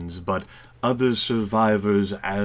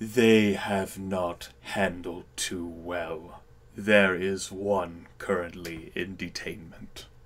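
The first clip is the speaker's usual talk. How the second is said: deep, low bass voice; 6 dB quieter than usual. Voicing the general answering a question, bass voice. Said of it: "The general says in that bass voice".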